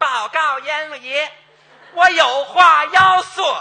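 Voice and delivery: put-on very loud, girlish, effeminate Tianjin dialect accent. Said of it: "女的女气还天津话".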